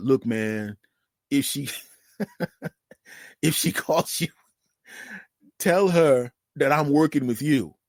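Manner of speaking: words breaking up with laughter. Retelling a friend's visit, laughing while talking. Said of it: "I'm sorry, I'm laughing".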